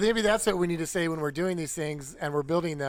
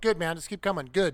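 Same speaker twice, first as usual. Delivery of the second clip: mock unbothered, matter-of-fact guiding tone. Retelling how a calm spotter guided a driver: imitating Brian's deadpan spotting. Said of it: "Brian straight deadpan face going".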